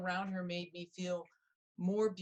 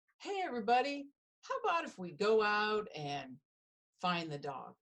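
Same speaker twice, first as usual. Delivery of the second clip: serene, calm, composed persona voice. Retelling suggesting to the family to find the dog: calm Rita Zen voice. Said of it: "in my best Rita Zen voice".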